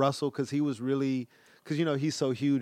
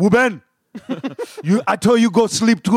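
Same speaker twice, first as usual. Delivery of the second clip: put-on Haitian-accented speech; 8 semitones higher, 11 dB louder than usual. Retelling a late-night phone call, imitating his father's Haitian accent. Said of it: "my father would be like".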